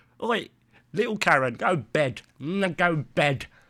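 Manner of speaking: put-on entitled, indignant complaining voice. Showing how the real karen will turn up: imitating a karen. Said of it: "The real Karen will fucking turn up like this".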